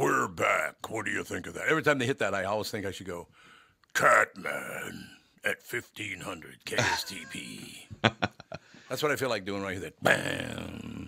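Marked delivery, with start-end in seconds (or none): 3.9-7.9 put-on wrestler voice, swooping and hyped. Radio host voicing a station tag after a sound effect, Hulk Hogan-ish voice. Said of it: "It's a little Hulk Hogan in that voice you just did".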